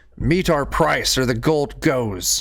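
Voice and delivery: terrible screeching harpy voice. Narrating a creature calling out from atop the catapult, terrible screeching voice. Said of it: "this terrible screeching voice".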